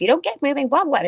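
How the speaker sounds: shrill, loud, nagging mom voice. Retelling what was said to a son one morning: naggy mom voice. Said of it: "naggy mom voice".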